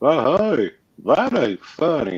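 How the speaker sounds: lazy put-on Texas drawl, laid on, swooping high. Talking about how Texans sound, the speaker quotes a boss, imitating boss's Texas drawl. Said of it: "that reminds me of one of my bosses. ... he's like that. He's like".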